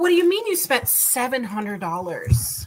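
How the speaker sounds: plain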